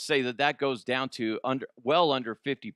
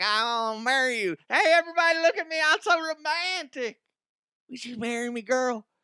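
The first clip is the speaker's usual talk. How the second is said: very high-pitched, smug, grandstanding show-off voice; 11 semitones higher than usual. Acting out a showy public proposal on a medal stand: mocking a showy proposer. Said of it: "some dickhead McGee comes over and be like".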